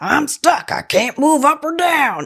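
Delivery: high, strained voice, slow and drawn out. Retelling someone stuck on a ledge, the speaker does it in his Powell voice. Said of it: "I should do it in my Powell voice".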